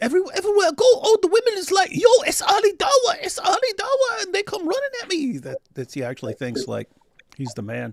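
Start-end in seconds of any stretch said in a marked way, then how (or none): 0.0-5.4 very high, squeaky, loud raised voice. Mocking how someone thinks women react to him: high squeaky Ali Dawah impression. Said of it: "your Ali Dawah impression, ... the right high squeaky pitch".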